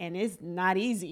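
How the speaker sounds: strong Dominican accent and manner. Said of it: "You sound like mad Dominican".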